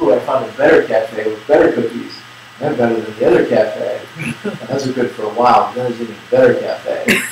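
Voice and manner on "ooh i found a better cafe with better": usual speaking voice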